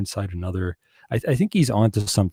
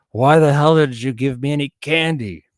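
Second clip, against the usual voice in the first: put-on drunk holler, loud and high; 5 semitones higher, 5 dB louder than usual. Describing prank calls at three in the morning, yelling in a drunk voice. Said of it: "yell at them in a drunk voice".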